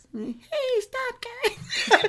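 tiny, very high-pitched little voice. Voicing self-control as a tiny little voice. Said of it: "that tiny little voice".

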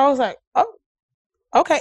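ordinary talk

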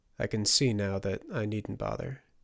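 ordinary delivery

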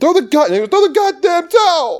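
very high, desperate, frantic screaming. Retelling a film scene where everyone yells at Rocky: imitating screaming. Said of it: "everyone's screaming at Rocky".

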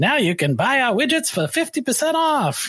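goofy, silly put-on voice. Voicing a company announcing something bad: silly put-on voice. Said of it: "I always use this like silly voice".

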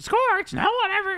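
very high, loud cartoon voice. Retelling a movie character's warning in a Marge Simpson voice. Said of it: "that's the Marge Simpson".

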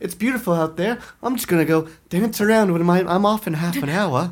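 put-on Southern belle accent. Retelling what a woman said, imitating her in a southern belle accent. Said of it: "I think that's a Southern Belle accent".

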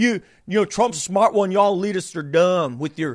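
mocking, put-on Southern US drawl. Retelling a pundit mocking Trump supporters: imitating a mocking Southern drawl. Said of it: "starts mocking Trump supporters doing a Southern drawl".

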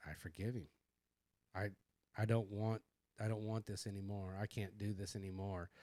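acted crying, tearful voice. Retelling a moment at the altar, reenacting speaking while crying. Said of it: "I'm crying on the altar".

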